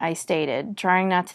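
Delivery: ordinary delivery, nothing marked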